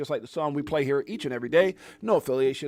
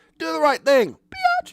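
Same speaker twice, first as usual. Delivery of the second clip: very high, loud, stretched-out, drawn-out comic voice; 13 semitones higher, 8 dB louder than usual. Recalling a line said to the SEC: Dave Chappelle voice. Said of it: "I said it in my Dave Chappelle voice".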